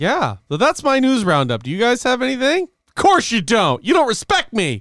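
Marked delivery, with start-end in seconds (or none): 1.6-4.8 put-on outraged shout, high fake-angry yell. Finishing a news roundup and asking the others for news: mock yelling at the others. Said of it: "Didn't mean to yell".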